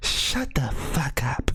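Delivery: small, gentle whispered tone. Describing how they would tell someone to shut up, in a soft little voice. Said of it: "In that same soft little tone".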